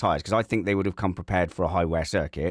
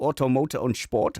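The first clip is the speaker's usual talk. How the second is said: mock German accent, higher pitch; 6 semitones higher than usual. Naming a German news source that broke a story: put-on German accent. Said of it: "You must say it in a German accent".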